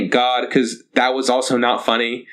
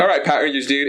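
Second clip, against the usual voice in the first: ordinary talk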